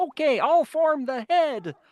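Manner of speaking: high-pitched, slow voice. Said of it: "he did, uh, Keith on Voltron".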